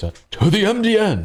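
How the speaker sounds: very high, very slow, stretched-out put-on voice. Joking while going through code: bad Adam West voice. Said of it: "You need your best Adam West voice".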